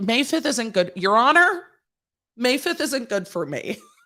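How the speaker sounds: tongue-in-cheek, sarcastic tone. Pretending to object to a court date: sarcastic complaint. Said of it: "I'm being sarcastic".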